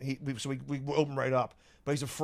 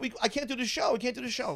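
mock, on the verge of crying, very high-pitched; 11 semitones higher than usual. Retelling words said when no key fit the lock: imitating someone almost crying. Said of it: "Wids almost crying".

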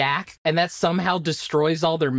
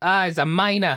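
New York accent on the word miner. Showing how a word reads in the head: New York accent. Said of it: "read the whole time as miner with a New York accent".

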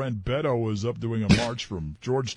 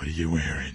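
put-on creepy voice, lower; 8 semitones lower than usual. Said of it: "sometimes I find myself doing a creepy voice".

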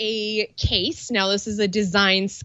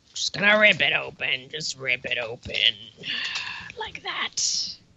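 put-on very deep, low, gruff wrestler voice; 7 semitones lower, 4 dB quieter than usual. Opening a package for viewers on camera, in a gruff wrestler voice. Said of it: "You guys like my gruffy voice?".

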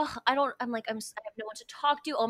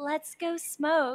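higher, sultry, seductive and sensual voice; 5 semitones higher than usual. Retelling what Savannah said when the speaker was upset: imitating Savannah's sensual voice. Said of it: "imitation of my voice. It makes me sound so sensual".

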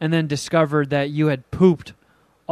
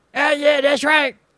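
put-on cartoon kid voice, higher; 11 semitones higher than usual. Imagining a South Park style cartoon scene: Cartman voice. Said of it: "a Jeff and Cartman molded voice".

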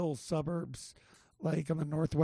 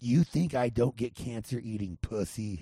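put-on voice with heavy, hard-pushed rasp; 6 semitones lower than usual. Taking a turn at celebrity impressions, raspy Michael Douglas impression. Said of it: "I think I can do Michael Douglas. ... You got the extra rasp".

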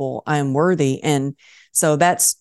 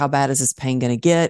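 usual speaking voice

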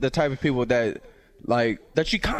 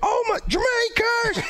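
very high, put-on excited shriek. Describing a person coming up in public, imitating someone screaming. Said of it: "just start screaming".

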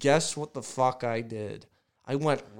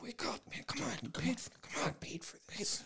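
much quieter, not yelling; 11 semitones higher, 14 dB quieter than usual. Retelling how a man woke him up, quoting him, not yelling. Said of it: "he wasn't yelling".

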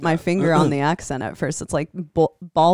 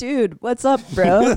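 put-on high-pitched California bro accent, Santa Cruz style; 5 semitones higher than usual. Speaker explains why family in Iowa mocks them, Santa Cruz bro accent. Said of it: "the Santa Cruz bro accent".

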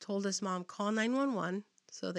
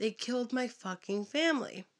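acted out, reined-in shout, half-voiced; 2 semitones higher than usual. Retelling how a man threw his neighbor against a wall: imitating someone yelling. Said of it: "threw him up against the wall and yelled".

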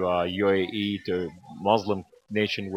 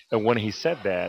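usual speaking voice

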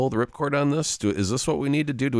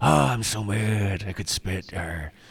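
slightly breathy, throaty voice; 2 semitones lower than usual. Speaker demonstrates the voice she did, a breathy, in-the-throat voice. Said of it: "got a little breathy, but it's kind of in the throat".

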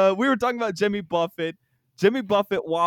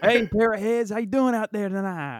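simple, generic, ordinary everyday voice; 2 semitones higher than usual. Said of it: "I don't know [name]'s voice".

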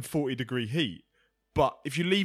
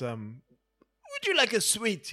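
slightly flamboyant voice, much higher, slower; 5 semitones higher than usual. Retelling a Gogglebox moment, quoting him in a bad Chris Eubank impression. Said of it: "That's not an impression, is it? That's fucking dreadful".

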